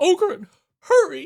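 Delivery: mock desperate girl voice, very high, wide whine.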